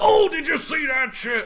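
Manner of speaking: high, slow, hyped-up gamer voice.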